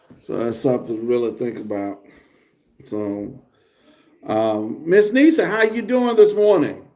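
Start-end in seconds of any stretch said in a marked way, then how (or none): 4.9-6.8 overly loud, over-projected, pitched-up delivery. Speaker greets someone by name, talking too loud. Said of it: "I don't know why I'm talking so loud".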